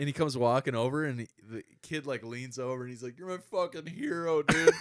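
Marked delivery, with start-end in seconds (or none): 3.2-4.7 mock, high, overexcited, worked-up gushing. Retelling a fan meeting a star on the sidewalk: imitating a worked-up fan. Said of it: "the kid is, like, so worked up".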